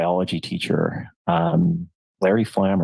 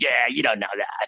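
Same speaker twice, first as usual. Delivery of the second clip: mock taunting child voice, pitched higher; 5 semitones higher than usual. Retelling mocking a TV preacher as a five-year-old: imitating a mocking child. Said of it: "mocking it".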